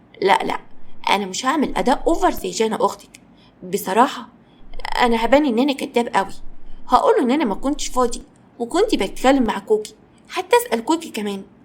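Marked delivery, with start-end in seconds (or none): none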